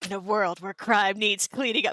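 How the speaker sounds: epic movie trailer narrator voiceover. Likening a scene to an action movie trailer, a speaker narrates: action movie trailer voice. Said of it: "like some sort of action movie trailer".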